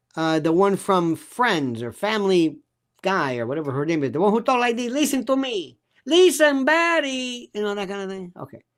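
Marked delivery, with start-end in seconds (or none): 4.9-7.8 put-on phony Spanish accent, pitched up. Mocking a woman who suddenly pretends to have a Spanish accent; fake Spanish accent. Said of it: "pretending she has a Spanish accent".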